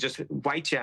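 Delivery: ordinary delivery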